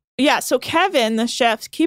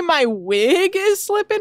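mocking high, slow delivery. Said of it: "Did you just say".

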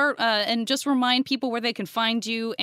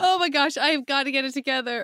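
words broken by laughter while talking; 3 semitones higher than usual. A host trying to regain composure with guests, laughing while talking. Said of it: "I cannot stop laughing".

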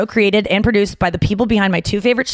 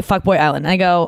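ordinary delivery

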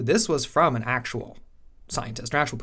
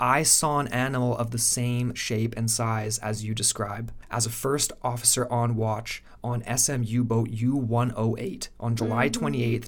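ordinary talk, nothing marked

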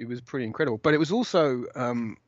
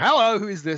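put-on slightly tipsy, stumbling, loud, pitched-up voice; 8 semitones higher, 5 dB louder than usual. Retelling answering a phone call at 11 at night: acting out being tipsy. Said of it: "I stumble kind of slightly tipsily into the room".

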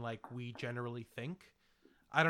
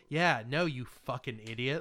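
put-on condescending voice. Retelling how another speaker just said no: imitating a condescending tone. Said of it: "had a tone of, like".

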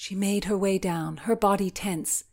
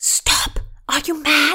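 urgent, reproving hiss, high and raised; 7 semitones higher, 8 dB louder than usual. Reading the servant inside answering Constance's knock through the door, hissed. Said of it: "The servant inside hissed".

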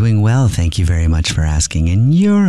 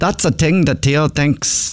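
attempted put-on Irish accent; 8 semitones higher than usual. Asked to have a go, saying the practice phrase in an Irish accent. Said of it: "let's hear you".

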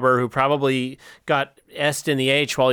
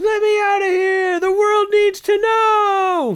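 higher-pitched mock screaming; 4 dB louder than usual. Acting out an imagined chained-up man: imitating a chained-up man screaming. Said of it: "like he's maybe been even chained up screaming".

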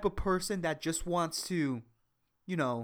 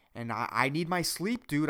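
ordinary delivery

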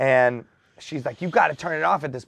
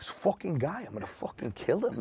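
hushed, breathy, threatening tough-guy voice; 11 dB quieter than usual. A DJ recalls Ray Liotta talking near the booth; menacing Ray Liotta impression. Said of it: "it just sounds like he's going to kill somebody".

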